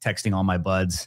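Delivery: ordinary delivery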